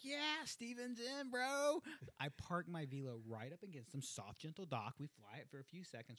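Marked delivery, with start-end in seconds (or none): 0.1-1.8 stoked inner voice, high and drawn out. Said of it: "I'm like".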